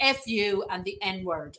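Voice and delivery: ordinary talk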